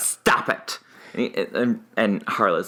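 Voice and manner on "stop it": mimicked sassy voice. Imitating people calming someone in a documentary, imitating sassy queens. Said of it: "it's like sassy queens".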